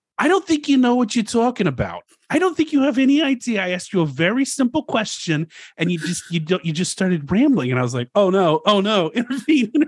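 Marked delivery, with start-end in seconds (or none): 0.2-7.7 put-on female New York accent, higher, faster. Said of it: "in that New York accent".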